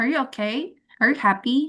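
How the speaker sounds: rising intonation on okay, happy. Teaching English intonation, demonstrating yes-or-no questions: rising question intonation. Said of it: "itu semua naik".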